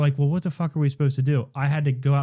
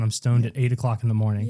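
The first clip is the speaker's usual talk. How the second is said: ordinary talk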